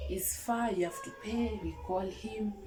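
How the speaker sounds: ordinary delivery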